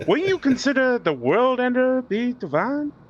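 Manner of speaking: very high-pitched attempted southern drawl. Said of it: "we were supposed to have a southern drawl".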